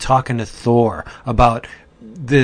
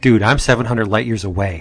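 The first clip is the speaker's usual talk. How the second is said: usual speaking voice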